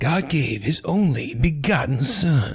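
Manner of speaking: corny, cheesy radio reading voice, high, very slow. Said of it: "read like scripture in like a really cheesy voice".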